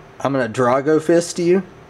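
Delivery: normal talking voice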